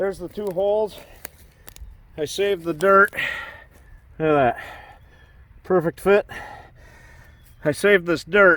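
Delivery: very loud, panting between words, out of breath. Speaker showing the holes they just dug: out of breath. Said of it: "trying to catch my breath".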